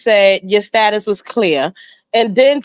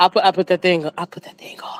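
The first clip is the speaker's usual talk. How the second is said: mock whisper, lower and quieter; 4 semitones lower, 5 dB quieter than usual. Imitating another speaker's answer about using protection: imitating someone whispering. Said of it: "You was whispering".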